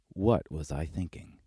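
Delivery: normal talking voice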